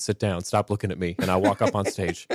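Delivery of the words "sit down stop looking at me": ordinary delivery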